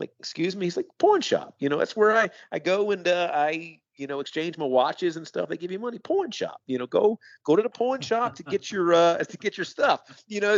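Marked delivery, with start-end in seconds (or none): 1.0-10.6 put-on slight northern accent, pitched up. Quoting a friend from a conversation one day, in a slight northern accent. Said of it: "a bit of a northern accent".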